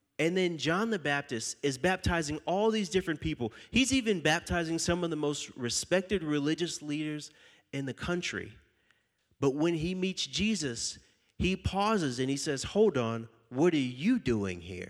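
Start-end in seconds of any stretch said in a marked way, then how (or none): 12.7-14.9 put-on wary, suspicious, confrontational tone. Retelling how John the Baptist met Jesus: imitating confronting an archenemy. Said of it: "Kinda like he ran into his archenemy".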